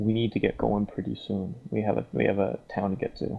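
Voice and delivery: calm, gentle, low-key tone. Playing Sarah, walking up to Mercer slowly so as not to spook the dog; speaking quietly. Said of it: "she's just gonna say kind of quietly".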